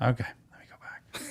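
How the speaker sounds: soft, quick whisper. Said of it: "There was a whisper there".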